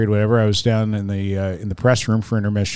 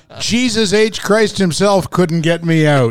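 put-on screaming, higher-pitched and louder; 8 semitones higher, 4 dB louder than usual. Retelling how a hitter screamed during batting practice: imitating Ted Williams screaming. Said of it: "he would scream at the top of his lungs".

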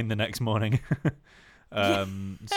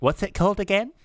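very high, loud, trite-sounding mocking copycat voice; 11 semitones higher, 7 dB louder than usual. Mocking the other speaker's question about a venue name: terrible impression of them. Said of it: "It's a terrible impression of me".

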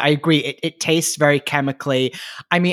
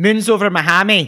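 higher-pitched Scottish accent; 5 semitones higher, 4 dB louder than usual. Speaker translates a menu item name into Scottish, Scottish accent. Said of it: "say that in Scottish voice".

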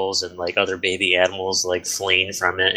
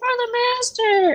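tiny, very high little battle cry scream. Voicing a small creature rushing at an enemy: tiny scream. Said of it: "he screams this tiny".

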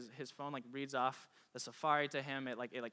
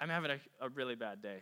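plain

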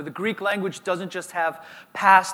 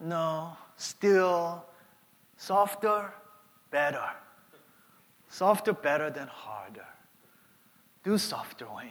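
put-on Korean accent; 5 dB quieter than usual. Retelling his dad's answer, he quotes him in his Korean accent. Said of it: "He's in his Korean accent".

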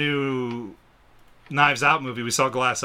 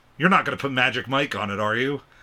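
ordinary delivery

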